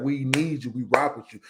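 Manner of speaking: usual speaking voice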